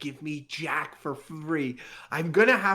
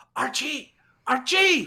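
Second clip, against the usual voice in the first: high, urgent whisper-yell; 8 semitones higher, 3 dB louder than usual. Climbing the stairs in an improvised scene, calling someone's name, whisper yelling. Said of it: "like whisper yelling".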